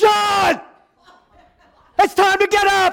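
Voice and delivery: high, loud yell. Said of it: "and I would go".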